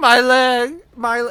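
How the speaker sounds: very high, very loud, slow, agonized scream of pain. Voicing an old guy hit in a crowd: screaming in pain. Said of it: "he's just screaming".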